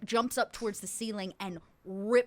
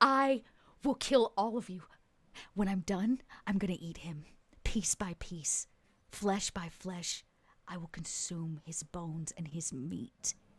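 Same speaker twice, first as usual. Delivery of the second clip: feral snarling voice of a possessed woman; 3 semitones lower, 4 dB quieter than usual. Voicing a possessed woman tied up, pulling and snarling: snarling possessed woman. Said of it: "pulling and snarling".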